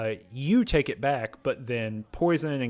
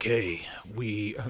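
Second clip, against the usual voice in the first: put-on grizzled warrior voice; 2 semitones lower, 4 dB quieter than usual. Retelling the Jefferson Memorial part, quoting Sarah Lyons: grizzled warrior Sarah Lyons. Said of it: "that's the kind of grizzled warrior".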